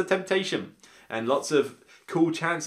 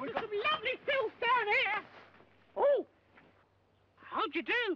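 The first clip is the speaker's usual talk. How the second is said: put-on weird, squeaky, very high old crone voice; 5 dB quieter than usual. Showing the old lady character from the expansion: Monty Python-esque squeaky old hag voice. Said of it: "in a sort of Monty Python-esque voice".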